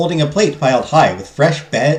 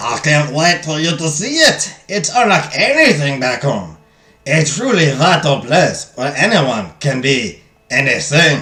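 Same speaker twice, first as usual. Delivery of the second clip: clumsy, bad, put-on French accent. Playing a character telling a companion about a place, in a bad French accent. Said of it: "I should probably stop trying to do the French accent".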